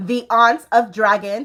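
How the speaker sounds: slow, deliberate, each word drawn out with care. Repeating the social media handle for viewers: slower.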